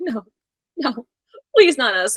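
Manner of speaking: mock begging, pleading tone. Speaker retells the french announce table's reaction to the wrestling spot, mock begging. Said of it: "begging not to get their shit rocked".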